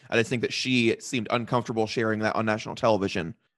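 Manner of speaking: normal talking voice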